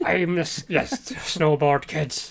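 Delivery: acted pirate character voice. Riffing on a pirate line after being asked for LeChuck: pirate voice. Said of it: "do the rest of the episode in that voice".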